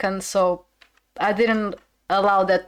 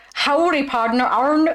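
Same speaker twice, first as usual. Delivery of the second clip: very bad fake American accent, pitched up; 6 semitones higher than usual. Speaker tries saying a character's name, in the worst American accent. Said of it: "That was the worst accent I could ever come up with".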